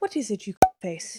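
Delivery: put-on posh, upper-class English accent. Quoting how she says a famous TV line, pommy posh accent. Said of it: "with her, like, pommy, posh accent".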